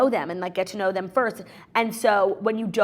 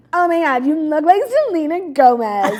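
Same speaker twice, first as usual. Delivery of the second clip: put-on very loud, high, drawn-out, gushing drunk voice; 7 semitones higher, 9 dB louder than usual. Retelling what a woman said while filming an Instagram story, imitating her drunk voice. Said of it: "you could hear her drunk voice".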